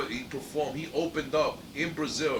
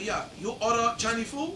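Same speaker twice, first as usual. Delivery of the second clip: high, bad fake Chinese accent. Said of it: "I said".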